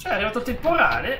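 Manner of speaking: high, loud, startled yell.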